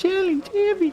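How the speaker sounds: put-on little girl whisper. Saying a word after being asked: put-on little girl's voice whisper. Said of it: "Please whisper, "Challenge," in a little girl's voice".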